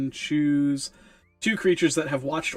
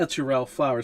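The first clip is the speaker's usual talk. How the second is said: plain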